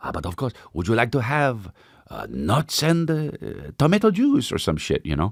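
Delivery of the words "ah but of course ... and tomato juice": put-on French accent, swooping, flight-attendant style. Retelling what a flight attendant asked: imitating a French accent. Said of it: "what's the French accent?".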